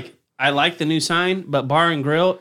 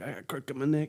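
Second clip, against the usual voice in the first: put-on talking like an old person; 11 dB quieter than usual. Explaining a phrase by imitating old people: imitating old people. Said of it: "old people, like".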